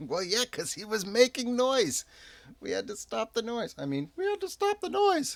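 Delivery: very high, squeaky small-folk halfling voice. In a role-playing game, answering Tear's accusation, in a halfling voice. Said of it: "I was trying to do my halfling voice".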